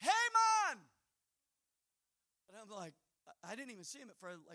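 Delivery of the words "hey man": piercing, very loud, shrill hollering. Retelling how a man on the other side of a fence yelled out to them, retelling a yell. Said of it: "he yells out".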